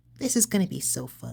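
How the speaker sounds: squeaky voice pitched way up. Practicing a character's line again to get it right: Fluttershy voice. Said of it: "talking in Fluttershy".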